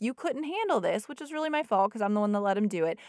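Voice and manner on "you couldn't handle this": fed-up, exasperated, aggravated remark, pitched high. Retelling what was said to a child after too much gaming: imitating own aggravated voice. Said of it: "getting aggravated and saying".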